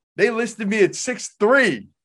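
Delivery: mock high, heated, worked-up yelling, out of control. Retelling how a man yelled at the SIDs about his listed height, mock yelling. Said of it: "he's yelling at all the SIDs".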